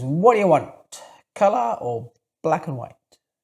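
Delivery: bad, not-quite New York accent, half-done. Quoting a store assistant's question to a young customer buying film, in a bad New York accent. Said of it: "He says in his best, not New York accent".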